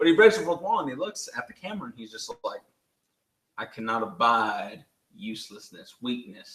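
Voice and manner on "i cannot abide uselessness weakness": put-on Southern accent, slower pace. Quoting a man who breaks the fourth wall, imitating a Southern accent. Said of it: "he has a good Southern accent".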